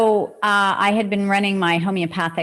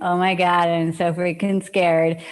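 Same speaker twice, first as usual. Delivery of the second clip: normal talking voice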